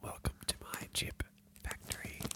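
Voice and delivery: soft hushed ASMR whisper, barely voiced. Whispering to make opening a bag of chips an ASMR experience: whispering. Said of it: "so we have to whisper".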